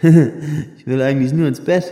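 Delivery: in a daze. Josh answers Luna from his place on the floor, dazed. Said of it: "sagte Josh benommen".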